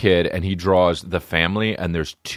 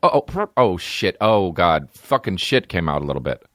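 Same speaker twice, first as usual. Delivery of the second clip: mock jumpy, startled, frightened outburst. Acting out hearing a scary noise alone at home: imitating a frightened reaction. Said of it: "you go like this".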